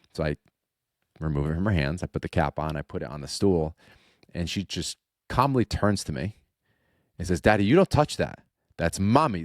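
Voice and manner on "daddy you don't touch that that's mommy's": put-on high, loud, scolding small-child voice. A father retelling his daughter scolding him, imitating a toddler scolding. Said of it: "She's scolding me".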